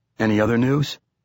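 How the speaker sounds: plain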